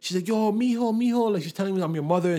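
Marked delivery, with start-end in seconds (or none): 0.3-1.3 sobbing, high-pitched tearful voice. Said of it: "laying in the airport crying".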